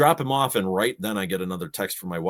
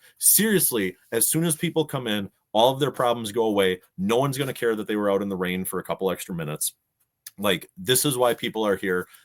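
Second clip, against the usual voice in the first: ordinary talk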